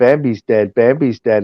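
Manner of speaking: mock tearful, frantic, freaked-out sobbing. Retelling a panicked morning, imitating a crying child: imitating a crying child. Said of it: "and she's crying, and she goes".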